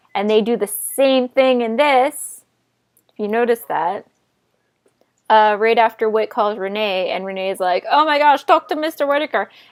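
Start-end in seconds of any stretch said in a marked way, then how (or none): 7.9-9.4 odd put-on voice, half Scottish accent. Retelling a scene where a character hands off a phone: odd put-on voice imitating Renee. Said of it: "I don't even know what voice I just did".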